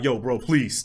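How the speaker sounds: mock shivering, pleading voice. Retelling a roommate begging in the freezing cold: imitating someone shivering and pleading. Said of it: "He's, like, shivering".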